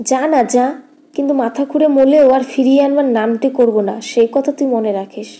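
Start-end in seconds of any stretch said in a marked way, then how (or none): none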